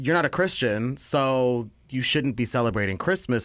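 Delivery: ordinary delivery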